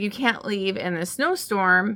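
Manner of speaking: normal talking voice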